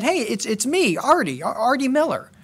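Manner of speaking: put-on eager voice, very slow, drawn-out, high, swooping. Telling a story of Arthur Miller calling a man's name, as mock-excited Arthur Miller. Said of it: "he excitedly called the man's name and said".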